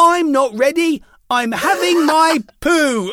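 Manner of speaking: put-on shrill little child's voice, very high, slow, drawn-out shout. Retelling how a child called out during filming: imitating a child shouting. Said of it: "this little voice shouted".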